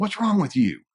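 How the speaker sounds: very high, harsh, accusing voice. Speaker showing a partner the tone to avoid: harsh accusing tone. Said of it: "rather than saying".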